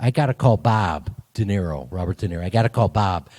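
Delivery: put-on strong Chicago accent. An actor recalls Michael Mann reacting to his audition, hardcore Chicago accent. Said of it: "Michael's got a very hardcore Chicago accent".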